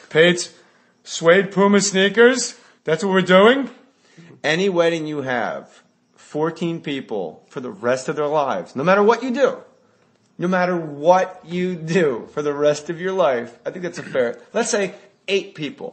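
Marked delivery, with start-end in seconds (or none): 0.1-3.7 put-on grumpy older man voice, higher and louder. Imitating a wedding guest complaining about the groom, in Alan Arkin voice. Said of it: "I don't know why I said it like Alan Arkin".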